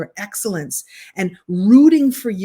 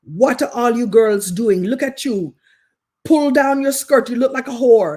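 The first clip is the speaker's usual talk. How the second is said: generic, all-purpose put-on Caribbean accent; 4 semitones higher, 3 dB louder than usual. Recalling a woman who stopped three girls in the hallway, all-purpose caribbean accent. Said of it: "I'm going to do an all purpose Caribbean accent".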